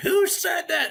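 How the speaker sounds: very high, shrill, enraged, furious scream. Retelling a teacher's reaction to a joke: imitating a furious scream. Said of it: "he turned around and he screamed".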